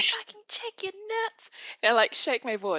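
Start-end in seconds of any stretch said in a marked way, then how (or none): 0.0-1.5 raised, higher-pitched shout. Retelling a warning shouted from the car: imitating Rachel shouting. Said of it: "shouting at me from the car".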